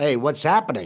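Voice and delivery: normal talking voice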